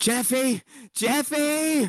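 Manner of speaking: very high shriek, stretched long. As Mama, screaming for Jeffy, who listens outside the door: screaming a name. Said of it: "you hear the screams for your name".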